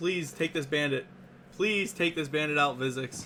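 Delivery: put-on pleading, mock-begging tone. A match commentator voices a player's plea to a teammate, mock-begging. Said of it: "And he's begging".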